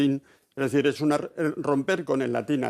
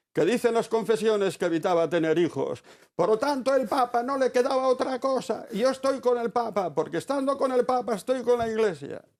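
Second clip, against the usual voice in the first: higher-pitched shouting; 9 semitones higher than usual. Retelling a theologian's lecture to a packed hall: imitating someone shouting. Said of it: "empezó a gritar en francés".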